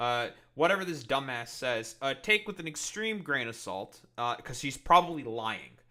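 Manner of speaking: ordinary delivery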